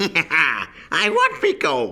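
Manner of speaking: high, very slow, swooping, drawn-out sing-song voice. Trying an old character's line after some years, in Leprechaun voice. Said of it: "I'm going to try and do the voice".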